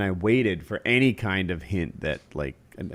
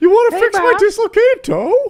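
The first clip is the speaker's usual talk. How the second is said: put-on chicken voice, higher and louder; 9 dB louder than usual. Retelling how a friend voiced a chicken: imitating a friend's chicken voice. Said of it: "Kyle had a chicken voice".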